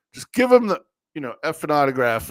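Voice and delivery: put-on restrained, mild, contained half-shout. Retelling a dad yelling to give his kid the autograph: imitating someone yelling. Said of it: "the dad yells at me".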